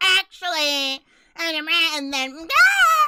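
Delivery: affected la-di-da speech. Imitating how a person they dislike talks: mocking a pretentious way of talking. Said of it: "She sounds so pretentious. She's like".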